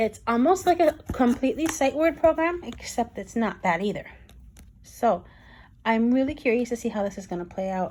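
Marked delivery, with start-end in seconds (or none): 5.8-7.9 fast, excited, rattled-off talking. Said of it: "the more excited I am, the faster I talk".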